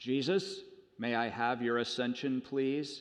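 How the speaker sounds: deepest possible, grand, almighty-sounding voice. Telling a joke, voicing God calling Jesus: deep booming God voice. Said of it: "with his greatest, deepest, God-booming voice".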